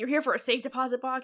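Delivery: furious, fed-up, angry delivery. Retelling a scene where the robber is really pissed off: imitating an angry robber. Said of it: "the robber's really pissed off".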